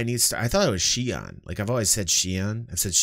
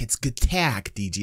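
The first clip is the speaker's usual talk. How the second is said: plain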